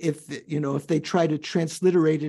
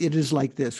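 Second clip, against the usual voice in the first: ordinary talk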